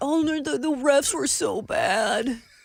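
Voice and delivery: high, drawn-out, complaining whine. Retelling how commentators complained about the refs: imitating whining. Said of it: "They were whining about".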